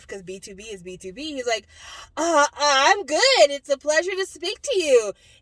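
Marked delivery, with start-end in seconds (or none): 2.2-5.1 very loud, high, flustered, nervous stumbling delivery. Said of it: "Bangchan being all nervous and stuff".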